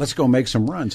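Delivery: plain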